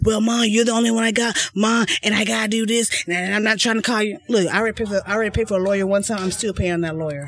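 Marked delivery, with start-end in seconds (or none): 0.0-4.2 put-on guilt-tripping, pleading voice. Retelling how her son calls and uses guilt: imitating son's guilt-tripping plea. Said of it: "try to use that guilt".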